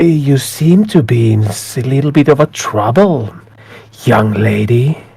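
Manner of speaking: ominous, dark, shadowy voice. Narrating a scene, the storyteller voices the voice the listener hears: dark shadowy voice. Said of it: "very shadowy voice. It sounds shadowy".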